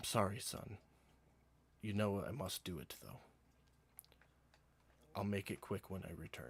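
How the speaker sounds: quiet, soft, hushed stage half-whisper. Voicing a character who speaks to Odess: half-whispering quietly. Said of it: "you will hear him whisper quietly to Odess".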